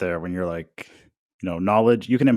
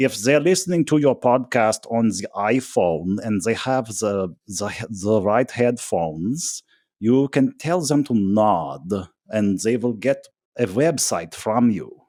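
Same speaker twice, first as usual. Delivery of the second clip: put-on heavy, thick German accent throughout, drawn-out. Quoting a guy from a spatial audio company, thick German accent. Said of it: "he had this thick German accent".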